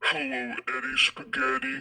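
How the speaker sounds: huge monster voice, dropped very low, soft. Narrator reads a monster greeting the narrator by nickname, deep monster voice. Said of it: "A deep voice".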